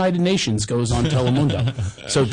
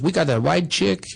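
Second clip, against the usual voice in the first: put-on bad Cuban accent, higher and faster; 5 semitones higher than usual. Quoting a woman describing her diverse all-female band, bad Cuban-accent Ileana impression. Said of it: "I'm imitating Ileana with a bad Cuban accent".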